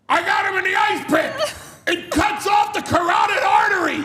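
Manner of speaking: shrill, booming, very loud, high-pitched yell. Act out grabbing somebody in a hold and telling the crowd, imitating Arn Anderson yelling. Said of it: "And he's yelling it to the crowd".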